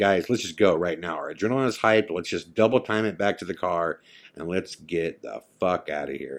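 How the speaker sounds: ordinary talk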